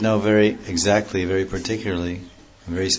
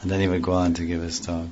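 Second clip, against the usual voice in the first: normal talking voice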